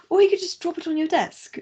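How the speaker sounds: put-on English accent. Quoting a character's line about a body: imitating an English accent. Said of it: "Nice English accent, by the way".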